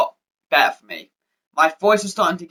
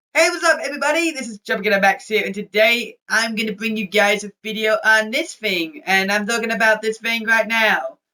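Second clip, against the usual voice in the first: put-on high-pitched sixteen-year-old teenage voice; 5 semitones higher than usual. Speaker recreates the voice he had at sixteen: his high-pitched voice at sixteen. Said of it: "I had a high pitched voice. I can try and get it".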